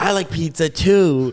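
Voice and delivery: slow drawn-out reply. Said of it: "Think about it in his voice".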